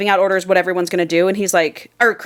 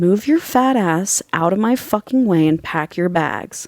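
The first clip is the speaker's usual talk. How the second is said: voiced stage whisper. Retelling how one character threatens another: imitating a half-whisper. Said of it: "bends down and whispers in her ear".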